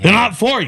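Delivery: high, sharp barking retort. Retelling what Joey said about the joints: imitating Joey's bark. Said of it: "he kinda has his bark".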